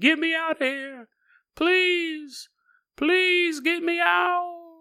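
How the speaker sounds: very high, slow, drawn-out ghostly begging. Imitating a ghost heard late at night: imitating a ghost begging. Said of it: "you'll hear him going".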